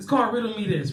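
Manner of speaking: ordinary talk, nothing marked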